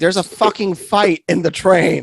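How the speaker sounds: put-on slow, drawn-out scream, word by word. Retelling screaming at the conductor during a train fight: imitating own screaming. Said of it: "I was just screaming at the conductor".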